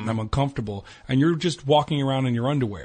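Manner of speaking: ordinary talk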